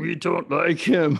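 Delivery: raspy, gruff and high voice. Guessing what the absent pod partner would say, in a Cookie Monster voice. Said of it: "it's like a Cookie Monster voice".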